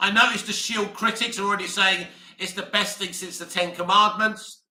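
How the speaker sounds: ordinary delivery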